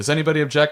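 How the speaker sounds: super-fast, high-pitched, rattled-off throwaway delivery. Showing one of two ways to read a question line: very fast. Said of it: "You either read it super fast".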